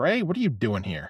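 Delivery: ordinary delivery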